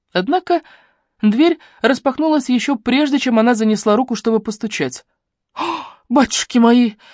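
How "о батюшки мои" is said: scared, startled cry of surprise. Opening the door to a visitor about to knock, a woman gives a frightened exclamation. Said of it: "испуганно воскликнула женщина".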